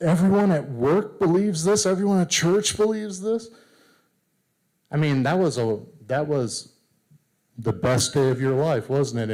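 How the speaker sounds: pointed sarcastic tone. Talking to an audience about being lied about, asking a sarcastic question. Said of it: "please note the sarcasm in my voice here".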